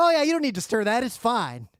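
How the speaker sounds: mock sarcasm oozing through, swooping. Imitating a video's commentary on what people are doing: imitating sarcastic commentary. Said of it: "you can hear the sarcasm just, like, oozing".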